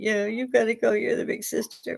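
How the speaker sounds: put-on crying, tearful, high-pitched and soft. Retelling the little sister's tearful phone call: imitating sister crying. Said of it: "and she's crying".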